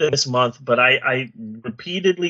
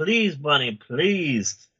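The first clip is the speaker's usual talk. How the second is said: mock pleading, begging; 4 dB quieter than usual. Retelling how they begged the other speaker to pick a film: retelling own begging. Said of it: "I begged, I pleaded".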